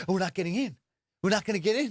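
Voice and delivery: panicked, rattled-off fretting. Retelling how a man in the room reacted, the speaker imitates a frantic guy. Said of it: "he's like frantic".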